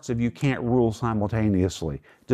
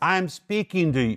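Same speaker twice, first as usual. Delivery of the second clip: play-acted, slow, raised voice; 7 semitones higher than usual. Explaining a passage, acting out a parent talking over a chattering child, imitating a raised voice. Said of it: "You have to raise your voice".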